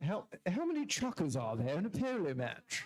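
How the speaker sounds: put-on posh, feminine-sounding voice. Rereading a quiz question aloud: put-on posh voice. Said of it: "I sound feminine when I do posh".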